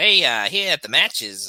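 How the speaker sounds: put-on wrestling announcer voice. Pitching a podcast idea, speaker calls old wrestling matches in the Jeremy Borash voice. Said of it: "in the Jeremy Borash voice".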